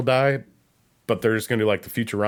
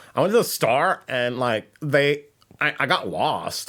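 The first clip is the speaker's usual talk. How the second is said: put-on trendy girly chatter, full of likes; 2 semitones higher than usual. Mimicking how chicks talk now: imitating how chicks talk. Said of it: "Most chicks talk like that".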